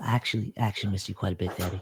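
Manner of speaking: hushed, soft half-whispered words. Game master as a daughter hugging her father after bringing tea; half-whispering. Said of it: "She whispers".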